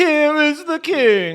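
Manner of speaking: very high, loud English accent, "king" stretched. Joking with friends, announcing the king in an English accent. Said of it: "you just invented the English accent".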